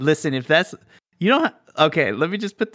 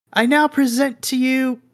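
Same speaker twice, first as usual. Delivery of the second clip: bellowed at full voice, high, full-lunged shout; 7 semitones higher than usual. Narrating a scene, a prince steps forward at the opened throne doors: shouting at top of lungs. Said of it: "at the top of his lungs, kind of shouts out".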